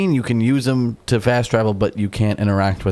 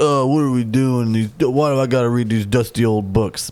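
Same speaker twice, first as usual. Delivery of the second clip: put-on lazy detective voice. Retelling a scene from Seven, imitating Brad Pitt's character. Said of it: "he's like".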